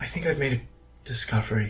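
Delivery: soft, hushed half-whisper. Voicing a character speaking through a sending stone: half-whispering. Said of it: "she does sound like she's whispering".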